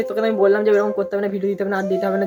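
plain

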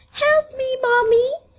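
high, crying doll voice.

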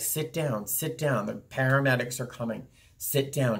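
ordinary delivery

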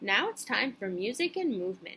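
usual speaking voice

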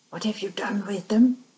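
loud, sharp hissing voice. A woman confronts a man about missing plans; hissed. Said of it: "she hissed".

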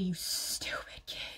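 whispered delivery.

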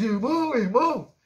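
loud hollered shout carried across a distance. In a told story, a man calls to his running brother, shouting from behind. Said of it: "ele gritou lá de trás".

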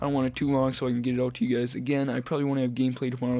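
talking really fast, rushed delivery. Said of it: "I'm talking really fast".

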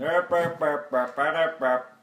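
loud mock Swedish-sounding gibberish babble.

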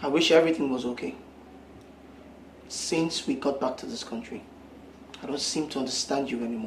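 very quiet, low, hushed, serious and earnest. Speaking to a partner at home, serious. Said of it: "You sound so serious".

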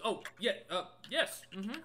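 nervous, high, hesitant, cold-sweat hedging. Voicing a character asked about a map: nervous, in a slight cold sweat. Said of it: "a little slight cold sweat".

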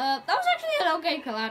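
very loud shout, voice breaking. Player reacting to a collateral kill in the game, voice cracking. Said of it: "Oh my god, voice crack".

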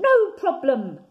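very loud, high-pitched call-out shout. Reading a story aloud, a small frog answers a bear's question: shouting. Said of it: "shouted Very Small Frog".

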